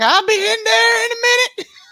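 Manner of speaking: very high, loud Southern woman's voice. Imitating a grandma still in the kitchen: imitating a Southern aunt.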